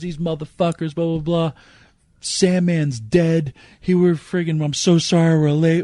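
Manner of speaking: put-on bawling voice. Retelling how a crying man burst in ranting, imitating someone bawling. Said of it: "He's bawling his eyes out".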